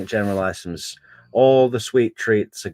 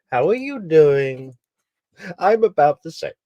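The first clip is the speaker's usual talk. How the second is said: put-on high little-girl toddler voice, like a five-year-old; 7 semitones higher than usual. A speaker announces she will now talk like a five-year-old girl, toddler voice. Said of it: "This is my toddler voice".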